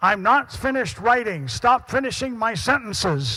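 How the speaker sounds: mock, high, loud, irritated talking-machine voice. Quoting a preset phrase the device can dial up, the speaker imitates an angry voice. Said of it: "it's so in an angry voice".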